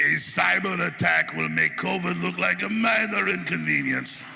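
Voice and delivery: slow, put-on Russian accent. Impersonating Klaus Schwab, Russian instead of German: Klaus Schwab in Russian accent. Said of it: "Kind of in a Russian accent instead of a German one".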